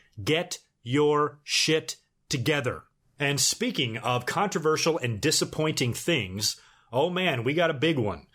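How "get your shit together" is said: slow, deliberate, spelled out word by word. Addressing a buddy who keeps messing up chances: said slowly. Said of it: "I'm gonna say this slowly".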